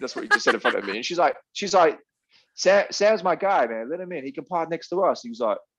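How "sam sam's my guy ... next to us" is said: put-on laid-on American accent, pitched up. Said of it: "'cause she's American and that's how she sounded".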